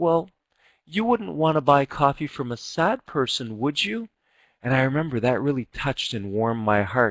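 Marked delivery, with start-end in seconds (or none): 0.0-4.1 play-acted very sweet, high, honeyed voice. Retelling what the coffee seller said to the speaker, imitating a very sweet voice. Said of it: "in a very sweet voice".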